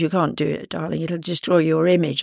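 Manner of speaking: usual speaking voice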